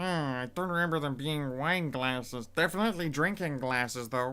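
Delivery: booming, very loud gnome character voice. The narrator voices a woman looking over her shoulder at an order, in a gnome voice. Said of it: "it's a gnome voice".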